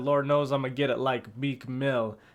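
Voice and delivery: ordinary talk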